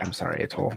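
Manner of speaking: hushed, barely voiced soft whisper. Apologizing in character before crushing a gem: whispering. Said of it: "I'm just gonna whisper".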